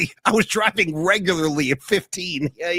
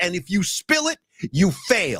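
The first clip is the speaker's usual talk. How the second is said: put-on angry voice. Retelling a movie driving scene, quoting the instructor: imitating an angry driving instructor. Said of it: "the angry driving instructor".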